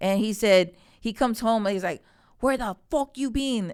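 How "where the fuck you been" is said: put-on mad, pitched-up Panamanian accent. Retelling his dad coming home and questioning him, in his dad's Panamanian accent. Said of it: "it was his Panamanian accent".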